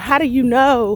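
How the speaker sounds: ordinary talk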